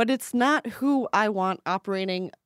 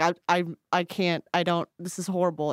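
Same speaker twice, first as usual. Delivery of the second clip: ordinary talk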